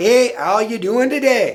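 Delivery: put-on regional northern Minnesota accent. Explaining regional dialects, demonstrating a greeting in a northern minnesota accent. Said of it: "think about people from northern Minnesota".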